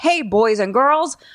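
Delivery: put-on slow, old-timey fifties kids' show host announcer voice. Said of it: "it's like the nineteen fifties guy".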